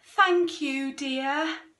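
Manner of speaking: feeble voice. Reading a children's story aloud, the narrator gives a character's reply weakly. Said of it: "said Mrs. Large weakly".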